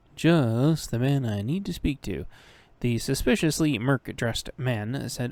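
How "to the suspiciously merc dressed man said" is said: ordinary delivery, nothing marked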